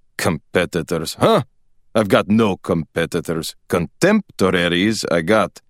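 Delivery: disdainful, scornful, contemptuous tone. A father answers the narrator's remark about competitors, scornfully. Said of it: "he said scornfully".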